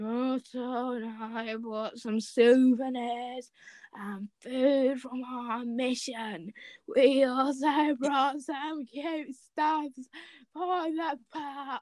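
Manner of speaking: put-on play-acted very old man voice. Reading Kirishima's lines in a story aloud: Kirishima voice as old man. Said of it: "Did you like the Kirishima voice?".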